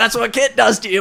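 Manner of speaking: high, loud, belted cheeky tone.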